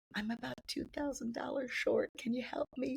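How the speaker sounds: timid, meek little voice, soft and high. Retelling asking her big sister for help with the rent: acting out a meek plea. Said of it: "meek as a meek little little baby sister".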